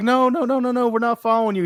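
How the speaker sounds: high, fast, protesting voice. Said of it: "And we were like".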